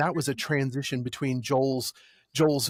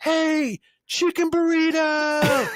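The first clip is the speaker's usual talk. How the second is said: shrill, very high, loud scream; 14 semitones higher, 5 dB louder than usual. Retelling a stranger calling out across traffic: imitating someone screaming. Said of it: "someone from the other side screamed".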